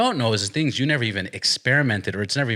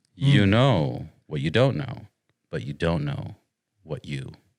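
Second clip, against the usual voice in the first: deeper, lower-pitched voice; 6 semitones lower than usual. Summing up a point about childhood for effect, in a deeper voice. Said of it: "now I'm gonna say in a deeper voice".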